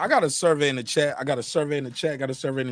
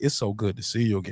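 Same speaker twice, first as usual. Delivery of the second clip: deep, flirtatious, swooping voice; 7 semitones lower than usual. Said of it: "he talking to you with the [name] voice".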